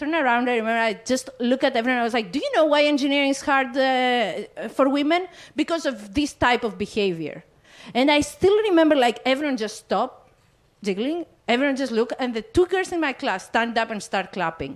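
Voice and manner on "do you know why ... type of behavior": ordinary delivery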